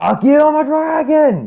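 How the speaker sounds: high, slow shout. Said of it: "after you shout".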